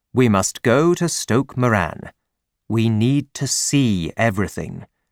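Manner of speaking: ordinary delivery, nothing marked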